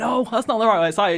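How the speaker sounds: put-on shouting. Telling a bus story, the speaker acts out everyone on the bus: retelling the crowd's shouting. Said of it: "Everyone's like shouting like".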